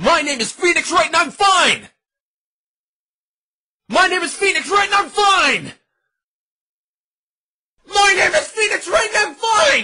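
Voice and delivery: screeching, shrieking. Practicing lines for a first trial with an exercise tape: screeching. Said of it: "all the screeching coming from the office".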